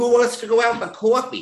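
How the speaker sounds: put-on very high voice with slight New York accent. Recalling being called back, the speaker repeats his past self's question: a bit of new york accent. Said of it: "I had a bit of a New York accent".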